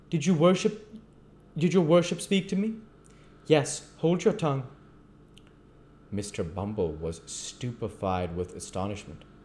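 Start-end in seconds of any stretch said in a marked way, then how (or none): 0.1-2.7 incredulous, disbelieving, much higher pitch. Reading Mr. Bumble asking the magistrate if he was addressed, incredulous. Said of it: "incredulous of having heard aright".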